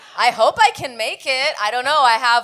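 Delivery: ordinary talk, nothing marked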